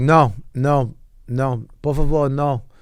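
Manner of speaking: very slow, flustered, panicked pleading. Retelling refusing a man begging for money: imitating own panicked refusal. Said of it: "I was panicking so much".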